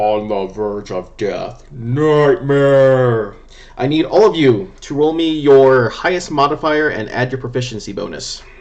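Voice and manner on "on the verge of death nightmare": very deep, gurgling voice. A figure rips open his own midsection and speaks, gurgling, very deep voice. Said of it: "in a gurgling, um, very deep voice says".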